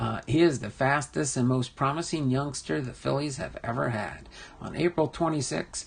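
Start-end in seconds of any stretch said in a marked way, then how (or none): none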